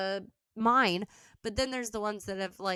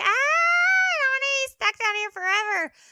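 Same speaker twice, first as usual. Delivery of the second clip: very high, loud, shrieking ghost scream; 8 dB louder than usual. Acting out the voices of ghosts stuck down below, mock ghost screaming. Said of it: "you can hear the screaming".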